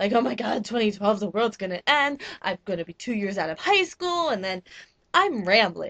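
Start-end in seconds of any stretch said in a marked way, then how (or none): none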